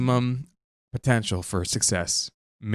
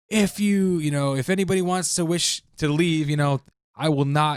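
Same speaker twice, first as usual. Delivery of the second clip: booming, pitched-up commander's voice; 7 semitones higher than usual. Retelling a scene, speaker quotes Pixis addressing panicking soldiers, in Pixis's booming bad-boy voice. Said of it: "in his like booming, awesome, like bad boy voice".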